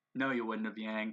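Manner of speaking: low, flat, bone-dry deadpan with no inflection. Retelling a scene, voicing John answering Yang, as John's deadpan reply, retold. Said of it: "John sort of deadpans is like".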